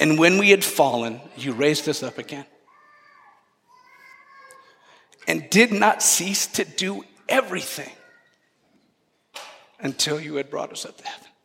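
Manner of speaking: teary, on the verge of tears. Reading from the liturgy to listeners, tearing up. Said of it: "That's why I'm tearing up".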